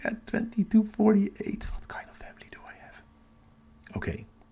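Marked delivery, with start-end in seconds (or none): 1.7-2.9 quick, quiet whisper. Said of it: "I'm whispering because everybody is asleep".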